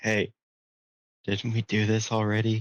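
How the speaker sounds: whispering in a character voice. Whispering in character to a companion in a tavern scene: whispering in character. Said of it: "I whisper to him".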